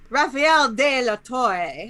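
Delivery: put-on Italian accent. Urging another speaker to say a name in an Italian accent, then trying it: Italian accent. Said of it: "Just try to say it with an Italian accent".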